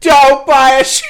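high, loud scream.

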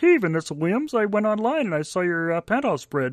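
high-pitched frog puppet character voice. Joking about a Muppets performance, doing a Kermit the Frog voice. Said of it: "Kermit the Frog be all like".

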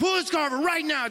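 mock angry, clenched-teeth words. Retelling a past moment in a car with her, angry through gritted teeth. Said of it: "you start talking through your teeth and you're angry".

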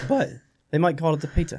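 bad, horrible attempt at a fake Swiss accent. Joking about how people in Switzerland would say the Peak, in a horrible Swiss accent. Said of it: "That's a horrible Swiss accent".

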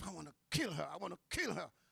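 gritted-teeth mutter. Recounting grabbing a girl who tried to jump out, the speaker is retelling a gritted-teeth mutter. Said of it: "gritting her teeth and saying under her breath".

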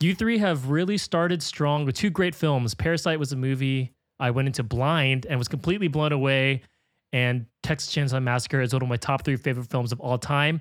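normal talking voice

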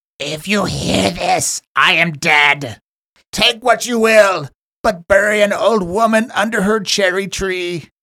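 put-on high, eerie, creepy old hag voice. Reading a message aloud so everybody hears, speaker uses a really creepy hag-like voice. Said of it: "really creepy hag-like voice".

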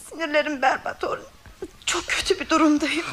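weeping. A mother talking to her son orhan, who asks her to stop, crying. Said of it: "Hadi bırak şu ağlamayı".

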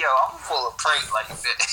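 normal talking voice

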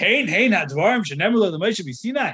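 scornful, mocking, sarcastic outburst. Explaining another opinion in a halacha lesson, voicing its exclamation: retelling a sarcastic exclamation.

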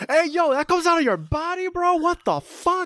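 high, freaked-out bro voice. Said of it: "Andrew y Tom Holland están como que".

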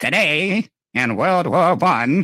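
put-on high, tinny, vintage old-radio announcer voice. Explaining the voice early radios made, imitating an early radio voice. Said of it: "that made this voice go".

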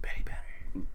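dramatic, hushed, unvoiced whisper.

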